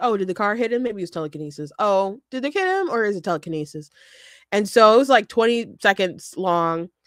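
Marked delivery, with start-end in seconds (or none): 0.0-3.9 fast, swooping, acted mock-innocent sarcasm. Describing a quick video about a viral clip, the speaker re-enacts it: retelling own sarcasm. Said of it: "I'm like sarcastically like".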